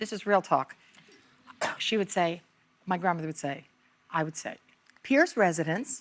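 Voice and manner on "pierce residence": put-on formal, polite phone intonation. Retelling how a grandmother taught answering the phone: imitating formal phone intonation. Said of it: "With the intonation".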